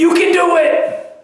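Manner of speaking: cheery, high, loud pep shout.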